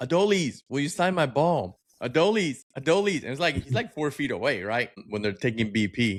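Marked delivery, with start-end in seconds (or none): 0.0-3.2 mock high hollering, over and over. Retelling a fan at Phillies practice calling to a player, imitating someone yelling. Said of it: "So he's yelling at Brian De La Cruz".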